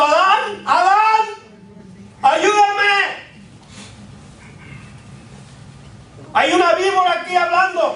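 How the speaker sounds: slow, very shrill, drawn-out panicked screams. Speaker acting out the woman crying out for Adán: acting out panicked screaming. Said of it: "Hubiera salido gritando".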